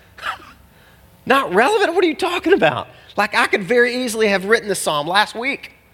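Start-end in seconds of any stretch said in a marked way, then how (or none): 1.2-2.8 very high, incredulous tone. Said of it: "I'm like".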